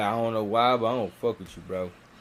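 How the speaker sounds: normal talking voice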